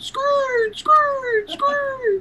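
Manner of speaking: very high-pitched mock yell. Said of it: "He would have been yelling".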